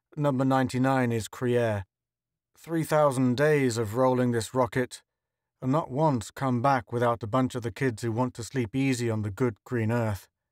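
plain

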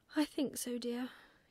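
speaking through a yawn. Reading a story aloud, Mrs. Barn Owl answers her son, yawning. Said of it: "yawned Mrs. Barn Owl".

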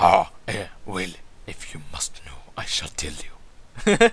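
deep, low-pitched woman's voice. A woman answers a stranger who greets her as ma'am, in a deep female voice. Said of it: "She has such a deep voice".

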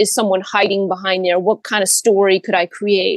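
normal talking voice

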